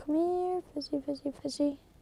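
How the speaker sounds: whispering. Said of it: "Why are you whispering?".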